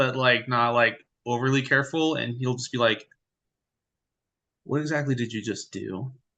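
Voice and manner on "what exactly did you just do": hush-hush, hushed, soft voice. Voicing a character who turns to another right away, hushed voice. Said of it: "try to keep it hush hush".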